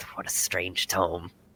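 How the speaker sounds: under his breath. Voicing a character staring at a floating book, saying under his breath. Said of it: "is just kind of saying under his breath".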